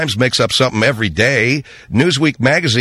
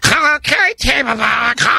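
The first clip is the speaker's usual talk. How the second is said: heavy put-on fat-guy voice, very high and rough; 12 semitones higher than usual. Showing the voice he did for Team America: Michael Moore voice. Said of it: "they wanted me to do the Michael Moore voice for that, and my voice was this".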